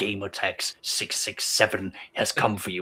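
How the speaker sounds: deadly threatening whisper, low, slow and menacing. Imagining an elf assassin leaning in over a victim: menacing whisper. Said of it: "as you lean in and whisper".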